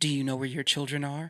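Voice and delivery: tv promo announcer voice. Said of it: "It's like".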